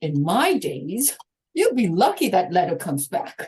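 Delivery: cranky, grumpy put-on old-timer voice. Retelling own reaction to people getting sober today: imitating a grumpy old-timer. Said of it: "I start to sound a bit like the grumpy old timers".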